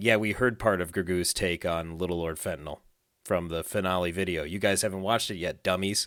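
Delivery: ordinary talk, nothing marked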